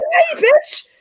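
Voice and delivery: mock war cry, very high-pitched and shrill. Recounting yelling at the cat Lando, retelling a yell. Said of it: "when I yelled "Die, bitch,"".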